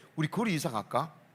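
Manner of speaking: ordinary talk, nothing marked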